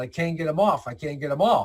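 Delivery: plain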